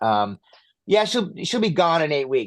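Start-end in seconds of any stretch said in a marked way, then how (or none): 1.0-2.5 blunt, businesslike, matter-of-fact tone. Retelling how the vet gave the prognosis: imitating a matter-of-fact tone. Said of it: "he just said it so matter-of-factly".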